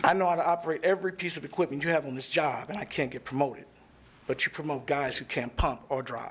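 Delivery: ordinary delivery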